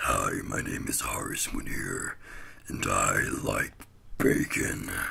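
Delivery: very low, creaky, rough demon voice. Showing off a voice by repeating a sentence someone suggested, in a demon voice. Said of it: "you haven't heard my demon voice yet?".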